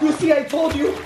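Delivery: high-pitched, panicked blurting.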